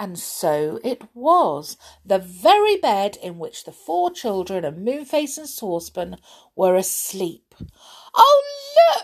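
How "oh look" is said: high-pitched squealed exclamation. Narrator reads a character's cry on finding the sleeping children, squealing. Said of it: "Squealed Silky".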